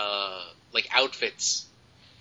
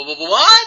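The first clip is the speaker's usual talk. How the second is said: high, loud, stunned stammer. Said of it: "It's like".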